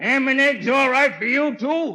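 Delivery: loud, high call, projected far. Calling to someone in another room about breakfast: yelling to another room. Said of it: "Who are you yelling to?".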